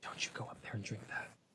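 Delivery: hushed, very quiet whisper under the breath. Retelling what a mother whispered in church: imitating a whisper. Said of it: "being whispered to in the church".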